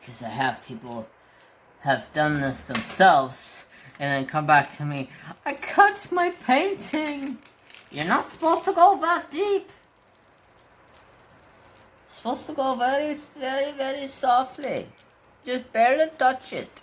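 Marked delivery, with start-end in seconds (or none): 5.4-16.8 put-on Indian accent, pitched high. Acting out someone who came back after trying it themselves, Habib voice. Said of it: "the freaking Indian voice".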